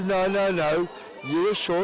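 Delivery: plain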